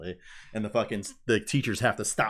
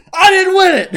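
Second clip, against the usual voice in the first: very high, very loud furious yell. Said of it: "he's just yelling at him".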